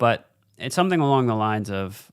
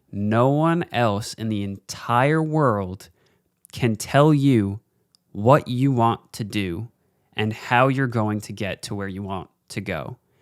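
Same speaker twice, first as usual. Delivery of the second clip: very slow, measured, deliberate and weighty delivery. A speaker telling viewers to define their own success, speaking very slowly. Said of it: "I'm speaking so slowly into the mic".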